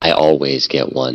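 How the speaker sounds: very low, secretive half-whisper. A player's character leans close to another character's ear, half-whispering. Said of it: "and whisper".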